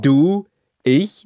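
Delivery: loud ventriloquist dummy voice. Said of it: "So, dann leg mal los".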